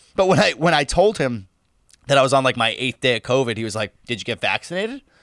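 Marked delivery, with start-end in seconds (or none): 4.1-5.0 low, quiet, pointed snarky tone. Recounting what a man said to the speaker, retelling a snarky question. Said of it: "He said it with a pretty snarky tone".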